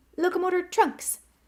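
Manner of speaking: very high, loud squeak. Reading a story, the narrator voices a professor casting a spell: Flitwick's squeak. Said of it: "He squeaked".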